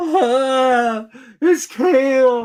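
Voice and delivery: high, drawn-out sobbing, "ah" stretched. Retelling walking in on a man and asking what he had, imitating someone crying. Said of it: "And he starts crying".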